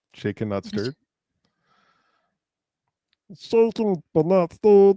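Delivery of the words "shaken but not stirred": very high, loud, bouncy, swooping, sing-song cartoon voice. Answering a question during a bit: Meatwad voice. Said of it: "you put on the meat wad voice".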